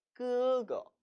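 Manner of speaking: 거 in 그거 light, unstressed, neutral tone. Pronunciation lesson, reading along: neutral tone on the second syllable. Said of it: "뒷부분을 경성 처리해 주기로 약속을 한 거예요".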